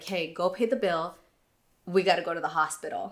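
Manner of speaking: quiet, breathy half-whisper under the breath. Retelling quietly telling a partner to pay the bill: retelling a half-whisper. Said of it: "I just whispered to Ron".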